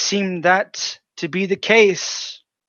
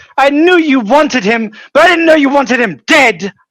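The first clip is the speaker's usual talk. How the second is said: very high, very loud, furious shrieking scream; 12 semitones higher, 9 dB louder than usual. Voicing an enraged spouse restrained by another character: screaming angrily. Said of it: "she's screaming obscenities at you".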